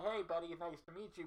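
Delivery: muffled voice, as if through a mask or respirator. Retelling meeting a stranger while both wore respirators, as if talking through a mask. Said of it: "both talking through our mask like this".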